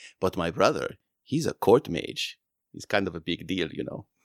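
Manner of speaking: low, secretive, conspiratorial confiding tone. A character leans in and confides, conspiratorially. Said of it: "she leans in kind of conspiratorially and says".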